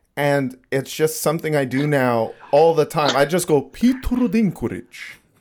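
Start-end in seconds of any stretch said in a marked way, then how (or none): 3.7-5.2 put-on Japanese accent, pitched up. Showing how they always say a certain name, Japanese accent. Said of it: "saying Peter Dinklage's name with a Japanese accent".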